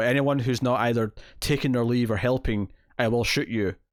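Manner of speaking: ordinary talk, nothing marked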